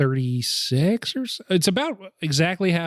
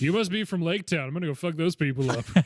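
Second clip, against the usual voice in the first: taunting, bullying tone; 3 semitones higher, 5 dB quieter than usual. Imitating the dragon after it is compared to a bully: Smaug as high school bully. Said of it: "high school bully".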